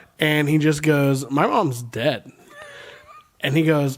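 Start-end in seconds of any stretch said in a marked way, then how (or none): 1.3-2.3 put-on four-year-old child voice, slower. Retelling trash talk in an online game, imitating a four-year-old kid. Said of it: "This kid sounds like he's four".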